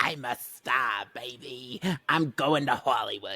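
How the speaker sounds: put-on disguised voice. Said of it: "That was me".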